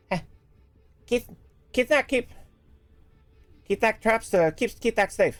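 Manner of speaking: muffled, as through a door. Narrating a game scene, voicing someone behind a door: muffled voice behind a door. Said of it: "You will hear a muffled voice behind the door".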